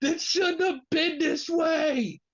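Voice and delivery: bawling, very high-pitched tearful crying. Retelling an emotional moment after a pin, imitating Trey Miguel crying. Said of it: "Trey Miguel just bust out crying".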